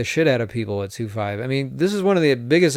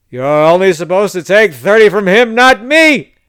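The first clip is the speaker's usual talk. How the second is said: loud yell, rising in pitch as it goes; 6 semitones higher, 9 dB louder than usual. Retelling an old player yelling at the dealer: imitating someone yelling. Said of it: "he keeps on yelling at her".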